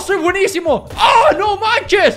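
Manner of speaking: overexcited gushing, high and loud. Gamer cheering after landing a shot, excited. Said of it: "me emociono, me emociono".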